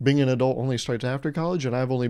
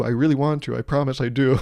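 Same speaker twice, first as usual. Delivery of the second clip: ordinary talk, nothing marked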